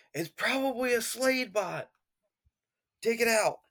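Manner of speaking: shouting. A player's character yells back to a teammate during the game, yelling. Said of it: "I'm gonna yell back to Beast Boy".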